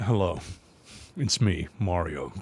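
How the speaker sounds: low, slow meme-style voice. Retelling a meme about an actor's Mario voice: imitating Chris Pratt as Mario. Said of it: "the whole meme where he's like".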